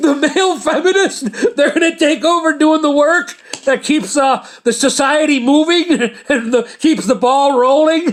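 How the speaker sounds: words broken by laughter. Joking about who will keep society running: laughing while talking. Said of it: "I couldn't say that without laughing".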